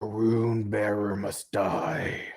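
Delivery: rasping, scraped-out, raspy voice. A game master voices an unseen speaker the players hear, in a raspy voice. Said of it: "you all hear a raspy voice".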